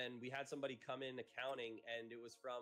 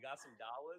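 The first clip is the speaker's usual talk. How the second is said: put-on strong accent, W sound replacing L in "dollars". Retelling how a college professor said "dollars": imitating a professor's accent, L said as W. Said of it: "he had a big accent".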